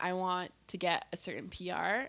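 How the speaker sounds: ordinary talk, nothing marked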